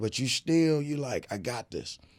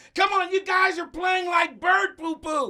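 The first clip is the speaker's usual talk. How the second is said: very high, loud, squeaky, upset voice; 5 dB louder than usual. Showing how he talks to the guys on the team, imitating him upset with the team. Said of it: "He does not talk like that".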